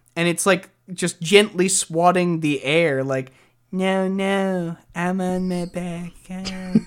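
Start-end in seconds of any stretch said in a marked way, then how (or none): 3.7-6.7 very slow, lolling, put-on cat voice. Describing a cat tipped on its back and swatting the air: imitating a cat on its back. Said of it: "when you tip a cat on its back".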